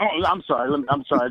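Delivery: plain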